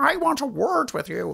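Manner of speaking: put-on very high, adenoidal, strangulated South Dublin accent. Retelling how a woman confronted the speaker, strangulated adenoidal South Dublin voice. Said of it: "That strangulated, adenoidal South Dublin voice".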